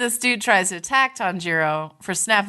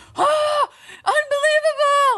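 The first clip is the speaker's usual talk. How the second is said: mock screamed outburst, very high; 3 dB louder than usual. Retelling an angry outburst before an attack, imitating Kanamori screaming. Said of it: "let off screaming".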